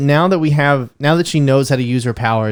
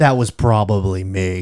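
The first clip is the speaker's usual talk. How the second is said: put-on actor's American accent, lower; 6 semitones lower than usual. Imitating a film character's line: Benedict Cumberbatch impression. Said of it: "I'm trying to get the Benedict Cumberbatch".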